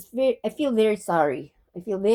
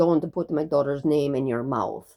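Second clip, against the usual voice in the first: very low, deep, stern, put-on Russian accent; 7 semitones lower than usual. Retelling what a man said when asked about his daughter, russian accent. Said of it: "he starts with a Russian accent".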